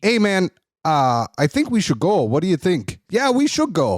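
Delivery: put-on Canadian-accented voice. Retelling how canadian hockey players talk before a fight, in a canadian accent. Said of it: "You have a very good Canadian accent".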